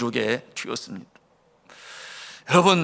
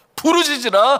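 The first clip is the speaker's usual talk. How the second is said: crying out loud, high and loud. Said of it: "큰 소리로 부르짖지요".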